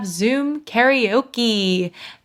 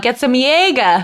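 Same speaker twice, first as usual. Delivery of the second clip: put-on Boston accent; 4 dB louder than usual. Joking about ordering a Jaeger bomb: Boston accent. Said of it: "I gotta get my Boston out".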